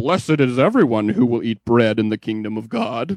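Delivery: pompous self-righteous tone. Retelling a Bible scene, mimicking a Pharisee: imitating a pompous Pharisee voice. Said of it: "Pharisaical voice in the world".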